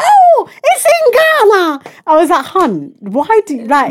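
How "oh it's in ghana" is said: very high, very slow, drawn-out screech. Speaker quoting what their mom said the other day: imitating mom screaming. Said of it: "she was screaming like".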